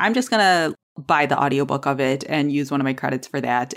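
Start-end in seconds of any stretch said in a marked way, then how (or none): none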